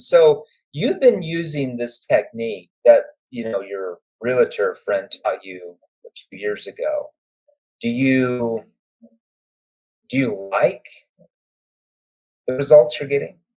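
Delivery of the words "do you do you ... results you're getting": deliberately slowed, halting, stretched, breaks between words. Teaching a questioning technique, asking the question slowly. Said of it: "see how I slowed down when I said".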